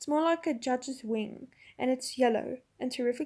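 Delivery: ordinary delivery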